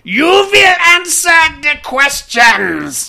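put-on high, piercing, screaming, shrill German accent. Describing a movie's parodies of German accents, shrill screaming parody German accent. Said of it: "parodies of German accents at a certain point, to where it just becomes like this shrill screaming".

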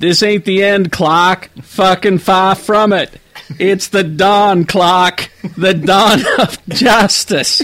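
bad attempt at a Boston accent. Reading a parody movie blurb, the speaker does bad Boston-accent Batman. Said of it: "I can't do a Boston accent".

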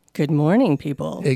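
put-on sexy radio announcer voice, low, sultry. Showing how they shouldn't talk on the radio, in a low radio voice. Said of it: "That's a little low".

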